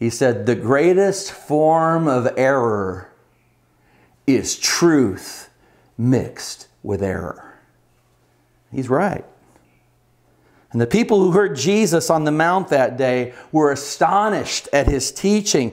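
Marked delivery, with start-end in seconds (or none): 0.5-7.6 deep voice, very slow measured rhythm. Recalling a college teacher's saying, imitating him in a deep, very slow voice. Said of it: "a deep voice and in a very slow um".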